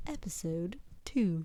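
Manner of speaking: put-on elevator announcer voice. Podcast hosts trying out intros, episode number in elevator-announcer voice. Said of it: "You could do it like in an elevator voice".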